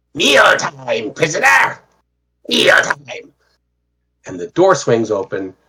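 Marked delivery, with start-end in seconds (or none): 0.2-3.4 put-on goblin accent, pitched very high. Narrating a game, voicing a goblin jailer calling to a prisoner, in a goblin accented voice. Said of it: "you hear a goblin accented voice".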